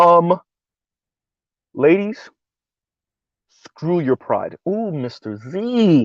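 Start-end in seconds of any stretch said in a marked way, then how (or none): 1.7-4.6 solemn, grave tone full of gravitas. Repeating a line from the previous video: with gravitas. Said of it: "let me say it with that same gravitas again".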